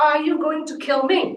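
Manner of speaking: resounding big voice. Retelling a man's question to the speaker on a spring day, in a booming voice. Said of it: "with a booming voice".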